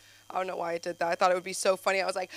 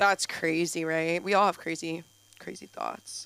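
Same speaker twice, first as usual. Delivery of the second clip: ordinary delivery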